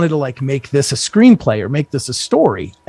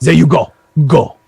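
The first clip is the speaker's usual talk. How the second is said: put-on heavy French accent, louder; 4 dB louder than usual. Retelling how a man shoved six-packs at them: put-on french accent. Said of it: "he had like a very French accent".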